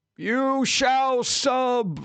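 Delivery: very high intoned wizard voice with sub drawn out. Showing how stream alerts should sound: Gandalf voice. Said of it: "I would like the voice for alerts to sound like Gandalf".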